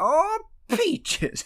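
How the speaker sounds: put-on high, squeaky old prospector voice. Recounting a comedy sketch to a co-host, Tracy Morgan's old prospector voice. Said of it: "doing this old prospector voice".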